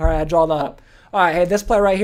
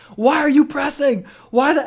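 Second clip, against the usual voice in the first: scream, higher; 8 semitones higher than usual. Retelling how the coach screamed about the full-court press: imitating someone screaming. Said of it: "he's still screaming at me".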